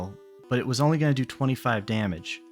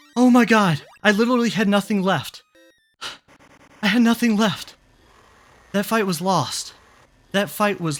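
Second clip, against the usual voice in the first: shaking, trembling, worn-out voice; 10 semitones higher, 8 dB louder than usual. Reacting right after barely winning a fight: shaking after a close fight. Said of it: "I'm about to pass out".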